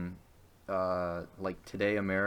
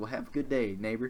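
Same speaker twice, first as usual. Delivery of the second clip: fake Southern accent, higher; 3 semitones higher than usual. Retelling how Jehovah's Witnesses at the door say goodbye, in a put-on southern accent. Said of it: "I don't know why I gave them a southern accent".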